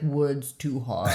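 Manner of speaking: caveman talk, mush-mouthed, words mushed together. Joking about speaking off stage after diction work: caveman speak. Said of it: "caveman speak".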